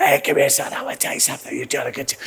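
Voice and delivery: hoarse, breathy, raspy whisper, hushed. Act out the coach talking to one of his players, in a Coach Stansberry voice, like laryngitis. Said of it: "He always sounds like he's got laryngitis".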